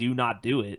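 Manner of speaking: plain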